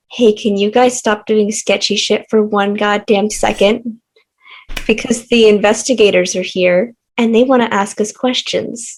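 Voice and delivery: secretive, confidential, urgent and pressing tone. Acting out what a woman will say to the group, in a hushed tone. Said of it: "In a hushed tone".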